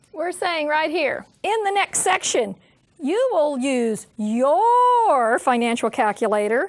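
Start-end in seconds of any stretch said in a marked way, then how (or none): 4.2-5.4 weight landed on "your". Speaker telling students about the calculator they must bring: stressing the word your. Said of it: "I stress the word your".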